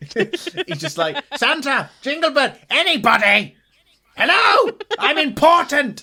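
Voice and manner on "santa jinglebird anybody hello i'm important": shrill, blaring, very high, very loud yelling. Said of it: "he is yelling incessantly".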